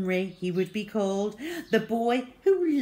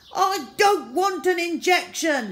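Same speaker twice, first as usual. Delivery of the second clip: high, loud, shrieking; 9 semitones higher, 5 dB louder than usual. Reading a story aloud, Horrid Henry's line as everyone screams: shrieked. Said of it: "shrieked Horrid Henry".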